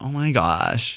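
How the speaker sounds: put-on California valley girl accent. Impersonating a woman who is not a valley girl, using valley girl accent. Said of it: "that's the accent that I do to impersonate her".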